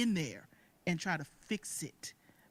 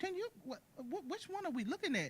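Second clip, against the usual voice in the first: high, hushed, amazed voice. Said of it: "I'm like".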